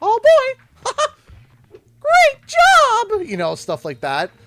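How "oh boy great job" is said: put-on cartoon mouse voice. Showing the voices they can do: Mickey Mouse voice. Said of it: "certain voices I can do Mickey Mouse".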